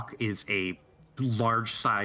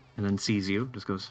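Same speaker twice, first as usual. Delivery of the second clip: plain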